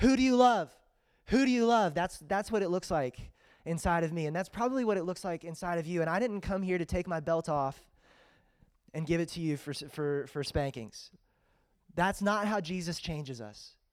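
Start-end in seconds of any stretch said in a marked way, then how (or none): 0.0-1.9 high, loud scream, repeated over and over. Describing what it looks like inside, voicing Cameron: imitating Cameron screaming. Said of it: "and screaming".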